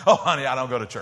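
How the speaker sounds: put-on dismissiveness. Retelling a server's reply to an invitation after dinner, imitating a dismissive reply. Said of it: "she just dismissively went".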